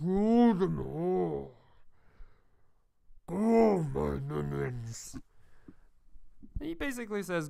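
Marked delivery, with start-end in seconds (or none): 0.0-5.2 low, slow, muffled, menacing villain growl. Narrating undead rising, voicing a hidden figure: muffled growling villain voice. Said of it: "a muffled voice saying".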